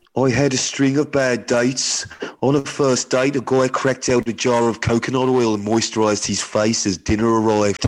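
put-on Birmingham accent throughout. Reading a woman's story aloud as asked, in a Birmingham accent. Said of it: "you've got to do the accent. I think she's from Birmingham".

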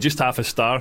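ordinary delivery

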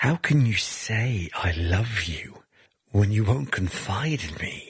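honeyed, sweet, false, insincere voice. Narrating the story, Delilah speaks to Samson in a sweet, false voice. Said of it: "says to him with a sweet, deceiving, false voice".

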